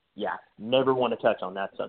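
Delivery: plain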